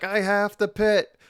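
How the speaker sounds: very slow, loud, high shout, word by word. Recounting when someone didn't hear the request: retelling a yell at him. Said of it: "like yelling at him".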